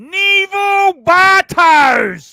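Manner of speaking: very loud, very high yell. After asking the group to say a name in a loud voice, loud voice. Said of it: "say Neville Bartos in a loud voice".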